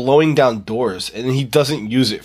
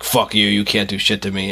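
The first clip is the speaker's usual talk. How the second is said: demonic devil voice; 4 semitones lower than usual. Describing a film scene, the speaker voices the witch talking like the devil. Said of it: "it's talking like the devil".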